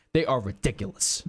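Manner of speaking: forceful loud sports commentator voice. Quoting a sports commentator on the Cowboys: Stephen A. Smith impression. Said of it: "That's a pretty good impersonation".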